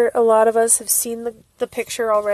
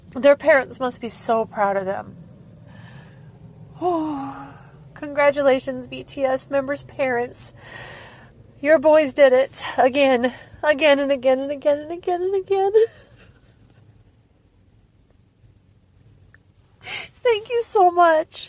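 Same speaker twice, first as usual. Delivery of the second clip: tearful, crying while speaking, higher pitch; 3 semitones higher than usual. Speaker congratulates the BTS members' parents, crying while speaking. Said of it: "I can't stop crying".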